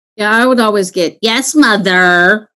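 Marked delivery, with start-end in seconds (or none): 1.2-2.4 slow, drawn-out snotty tone. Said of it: "that snotty tone of voice".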